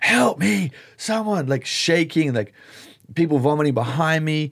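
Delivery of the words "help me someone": put-on scream, higher pitch. Retelling a terrified man in the dark: imitating someone screaming for help. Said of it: "he's screaming at the top of his lungs".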